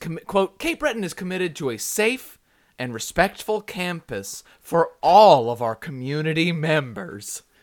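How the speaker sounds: slow, stilted, over-enunciated with weird pauses. Imitating how she might have spoken a university statement, over-enunciated with odd pauses between words. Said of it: "With weird enunciations and weird pauses in between words".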